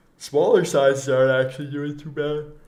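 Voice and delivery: speaking through a yawn. Reviewing sneakers on a video, talking through a yawn. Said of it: "I'm yawning".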